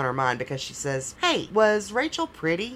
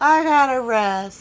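put-on slurred, tipsy, loud, high drunken laughing speech; 6 semitones higher, 5 dB louder than usual. Retelling what a stranger said as she sat by your seats, imitating a drunken laugh. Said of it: "she very drunkenly laughs and says".

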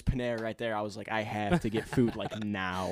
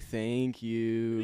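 put-on, level, flat, almost condescending monotone. Describing being given water, the speaker acts out a mock flat, almost condescending thank you. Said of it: "I just do this tone, it just comes out so monotone and like condescending".

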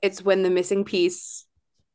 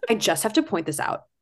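put-on condescending voice. Imitating Jeff pointing out a mistake to Jake: condescending Karen voice. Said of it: "condescending Karen".

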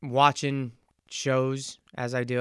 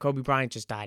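acted choked-up voice catching with tears. Retelling telling parents some sad news: retelling words said choked up. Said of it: "tears getting choked up".

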